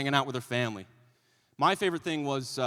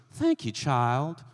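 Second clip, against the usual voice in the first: put-on elderly woman's voice.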